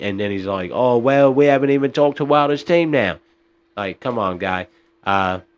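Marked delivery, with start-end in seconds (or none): 0.7-3.2 put-on British accent, higher. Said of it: "that was my impression of Eddie Hearns".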